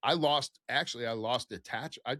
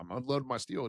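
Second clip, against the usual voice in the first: ordinary talk, nothing marked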